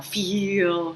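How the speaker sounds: feel with the ee vowel drawn way out. Showing how the speaker always says the word: drawn-out 'feel'. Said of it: "I really draw it out like it has like ten E's in the middle".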